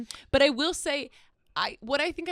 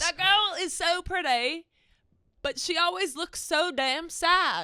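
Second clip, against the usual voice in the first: put-on British accent slipping into a Southern accent; 7 semitones higher than usual. Repeating what a guy said about the other speaker, in a british accent turning southern. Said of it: "you went from British to, Southern".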